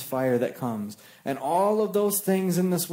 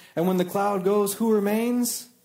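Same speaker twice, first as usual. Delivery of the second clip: ordinary talk, nothing marked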